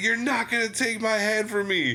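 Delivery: very high, shrieking yell. Retelling a scene where a man fights his possessed hand, imitating someone yelling. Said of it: "And he's like yelling at it".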